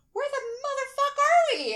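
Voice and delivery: shrill, frantic, high, agitated panicky shout. Retelling a drive past Scranton, Pennsylvania: retelling an agitated outburst. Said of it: "just calm down".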